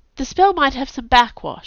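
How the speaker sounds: quick, rushed delivery. Camilla, caught out when Kai asks what she's doing, says it quickly. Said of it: "she said quickly".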